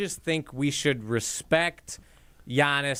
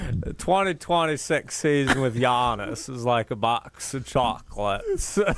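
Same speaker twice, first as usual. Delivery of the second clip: mature, aged character voice, drawn out slow; 3 semitones lower than usual. Doing a texted line in a Forrest Gump voice after others ask: Forrest Gump voice. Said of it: "Somehow you sound twenty years older when you do that".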